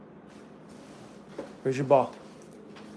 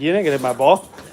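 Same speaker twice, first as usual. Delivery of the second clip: put-on dog voice. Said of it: "He's like".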